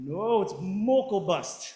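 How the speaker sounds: put-on Minnesota-style accent. Retelling how the composer corrected the speaker's pronunciation, imitating Kathy Mokelbust's Minnesotan accent. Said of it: "in her best Minnesotan accent".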